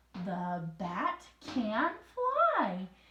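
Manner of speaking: loud, swooping, very slow, drawn-out excited reading. Modeling how to read aloud a sentence ending in an exclamation point, excited reading. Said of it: "the reason I read it like that is because there's an exclamation point".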